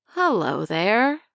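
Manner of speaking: rasping, rough-edged raspy voice. Reading a character's greeting to the narrator aloud: raspy voice. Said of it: "Mildred said in a raspy voice".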